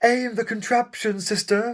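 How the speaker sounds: very high, stupid, silly put-on voice. Announcing a stupid voice and then doing it, silly put-on character voice. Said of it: "I'll do a stupid voice then".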